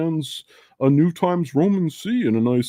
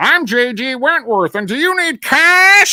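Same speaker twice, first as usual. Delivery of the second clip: obnoxious, very high, loud commercial announcer voice; 11 semitones higher, 5 dB louder than usual. Quoting a commercial guy with an obnoxious voice: imitating an obnoxious commercial voice. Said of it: "the guy had an obnoxious voice".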